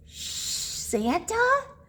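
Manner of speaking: soft, hushed, shushing whisper. Narrator reading a Christmas story, the reindeer speaking to Santa, whispered. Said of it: "whispered the reindeer".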